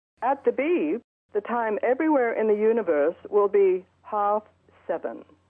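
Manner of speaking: lovely, pleasant put-on British accent. Imagining dialing a Big Ben time line, the speaker voices the answer: lovely British voice. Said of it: "some lovely British voice would tell us".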